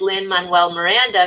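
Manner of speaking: plain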